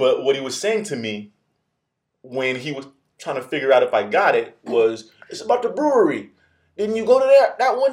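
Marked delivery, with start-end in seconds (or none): 5.3-7.9 very high put-on man's voice. Retelling what a man said about an email, imitating him in a voice. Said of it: "I'm doing this voice".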